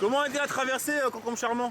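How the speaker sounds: normal talking voice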